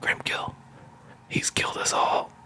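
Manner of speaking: faint, barely audible, whispered last-breath voice. Retelling a character's last words to the players, retelling a dying whisper. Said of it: "he whispers".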